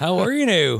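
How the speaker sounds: acted, high-pitched hollering. Pretending to call out to a neighbor across the river: pretend shouting across a river. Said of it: "You shout at the guy across the river".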